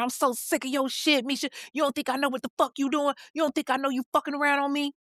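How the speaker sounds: acted heated yell. Retelling a boyfriend's accusation during an argument: imitating someone yelling. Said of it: "He just starts yelling at her".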